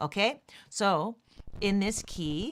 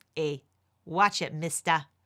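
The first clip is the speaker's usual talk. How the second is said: poorly done, put-on Boston accent; 4 semitones lower than usual. Teaching chords to Stephen, the speaker jokes in a horrible Boston accent. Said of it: "my horrible Boston accent".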